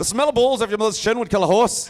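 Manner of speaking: put-on Irish accent. Retrying the phrase in an irish accent after a first attempt. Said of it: "Irish accent".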